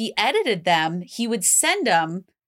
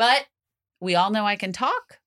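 plain

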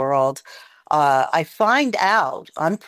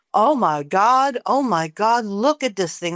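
mock half-voiced scream, mild reined-in yelling; 4 semitones higher than usual. Retelling a man in the car screaming on a dark road: retelling a scream. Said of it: "He starts screaming".

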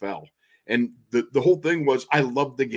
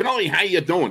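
squeaky, high-pitched voice; 6 semitones higher than usual. Retelling a phone call at the Super Bowl: Myron Cope squeaky high voice. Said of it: "he had that squeaky high voice".

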